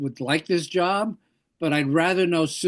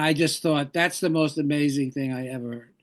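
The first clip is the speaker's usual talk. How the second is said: ordinary talk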